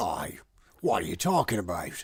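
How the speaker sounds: put-on Aussie character voice, Australian accent. Voicing the audiobook character Cutter on request: Cutter's Australian voice. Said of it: "He was Australian".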